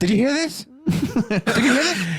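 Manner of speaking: play-acted, very high-pitched, fretful, nervous voice. Joking about a man in protective suits, imitating a nervous man. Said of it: "like actually nervous".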